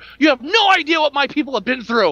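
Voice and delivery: put-on, full-on, high-pitched shouted voice. Retelling a scene where a man yells at a woman: retelling a yell. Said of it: "And he like yells at her".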